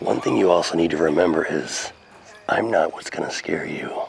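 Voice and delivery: very low, quietly menacing, calm voice. Demonstrating how to be scary without yelling at anyone, voice dropped down and calm. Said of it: "you drop your voice down a little bit and you stay calm".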